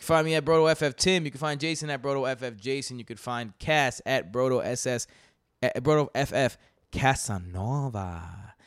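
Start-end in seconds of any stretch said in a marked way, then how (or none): 5.6-8.2 put-on sultry, slightly sexy Latin American accent. Telling listeners where to find each host, saying a co-host's handle in a little Latin sexy voice. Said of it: "saying it like that, like sexy voice, but like a little Latin sexy voice".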